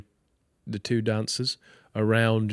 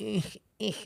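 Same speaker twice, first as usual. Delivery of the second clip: tiny, squeaky, very high little groan; 10 semitones higher, 9 dB quieter than usual. Imitating how Harry would groan doing the splits: imitating Harry's little groan. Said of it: "the little groan he does".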